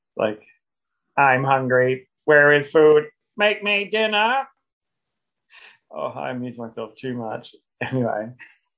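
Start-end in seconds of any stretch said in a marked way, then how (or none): 1.2-4.5 robotic alien voice, slower. Joking about sounding like a Dalek, doing an angry Dalek voice. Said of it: "it takes a Dalek only 3 goes to get really upset".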